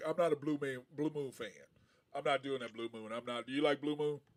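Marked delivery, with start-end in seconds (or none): none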